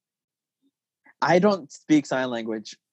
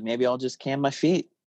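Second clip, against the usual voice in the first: ordinary talk, nothing marked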